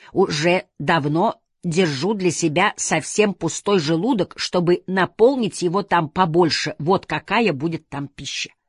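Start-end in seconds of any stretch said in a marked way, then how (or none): none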